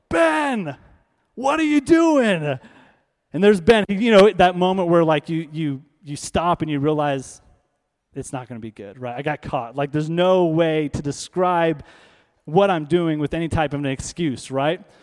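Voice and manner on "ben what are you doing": high, drawn-out yell. Retelling how the father caught his brother: imitating dad yelling. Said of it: "he yells".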